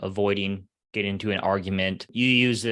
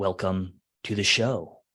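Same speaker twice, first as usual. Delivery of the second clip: slowed-down late-night FM radio DJ voice. Demonstrating the voice a guest described, welcoming listeners: FM radio host voice. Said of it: "going into your F M radio host voice".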